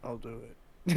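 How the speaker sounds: put-on dead, lifeless voice. Retelling a coworker volunteering for an empty register: Matt's dead voice. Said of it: "Just with the most dead voice and dead face".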